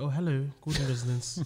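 put-on telephone voice. Imitating her answering the phone, put-on telephone voice. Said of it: "that telephone voice goes on".

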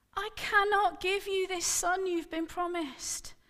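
desperate high outcry. A woman calls to a man who didn't answer her, crying out. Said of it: "she cried".

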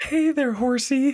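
very high character voice. Recalling a TV scene, quoting the line: imitating Tammy. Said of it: "her impression of Tammy was spot on".

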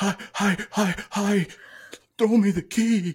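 high, squeaky, manic silly voice.

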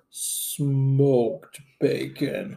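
very slow, low, drawn-out drawl. Asking the cook to talk slower, then saying the ingredient back: very slow.

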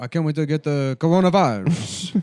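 put-on Italian man's voice. Mocking an Italian guy eager to catch the virus: imitating an Italian guy. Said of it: "it was an Italian guy who's like".

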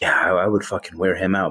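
put-on imitated whisper. Retelling what a woman whispered to a man, imitating her whispering. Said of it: "she's like whispering to him like".

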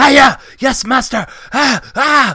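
put-on very high, loud, drawn-out kid karate screams. Retelling kids fighting in a dojo: imitating kids screaming. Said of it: "Just kicking and screaming".

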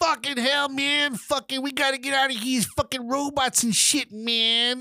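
put-on very high little old-lady voice. Retelling a game scene where an old granny appears: imitating an old granny character. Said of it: "this old granny comes out of nowhere, and she's like".

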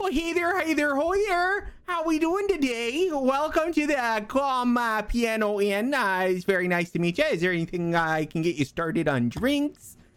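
very high-pitched, swooping gnome voice. Voicing a gnome in an apron greeting guests at an inn: gnome innkeeper voice. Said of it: "When out walks a gnome".

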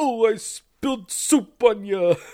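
loud, high voice, every word drawn out. Imitating someone spilling soup on a guest: Rodney Dangerfield voice. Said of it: "I'm doing a Rodney Dangerfield voice".

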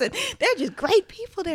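loud, high Southern country twang. Retelling what dad said about church: imitating dad's Southern country accent. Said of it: "my dad has a country accent".

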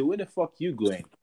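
ordinary talk

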